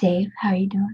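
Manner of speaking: ASMR-style whisper close to the mic. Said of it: "get really close to your mic and whisper".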